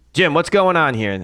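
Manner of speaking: eager, worked-up, very excited tone. Asking why the match has not started: really excited. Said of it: "I'm just really excited".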